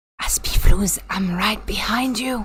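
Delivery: soft, hushed whispered aside. Speaker talking into the microphone to someone named aspiflus, whispering. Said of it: "I don't know why I'm whispering in this".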